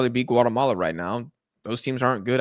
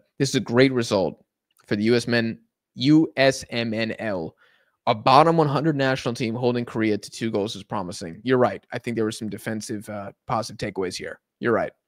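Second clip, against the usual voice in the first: ordinary talk, nothing marked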